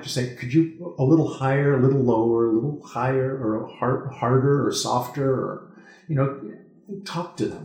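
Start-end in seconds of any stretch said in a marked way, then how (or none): none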